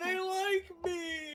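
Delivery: very high, tearful, blubbering crying voice. Playing a character who starts crying mid-scene, crying. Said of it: "he starts crying. He's like".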